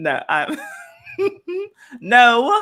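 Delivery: helpless, high, loud laughter through the words.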